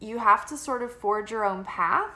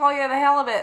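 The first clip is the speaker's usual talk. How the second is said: put-on Australian accent, higher and louder; 4 semitones higher, 5 dB louder than usual. Retelling answering a customer's daughter: imitating an Australian accent. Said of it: "answering her in the accent".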